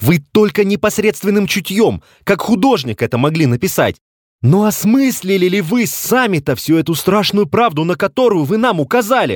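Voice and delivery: high, emphatic outcry full of strong feeling.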